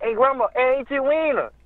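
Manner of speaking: put-on high-pitched nerdy child voice. Recalling kids at grandma's house, the speaker imitates a kid in a little Urkel voice. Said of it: "like sound like little Urkel".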